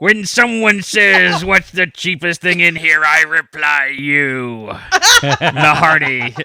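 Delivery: put-on pirate voice, slow, drawn out, high. Reading a customer comeback aloud after being asked to: pirate voice. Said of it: "Do it in pirate".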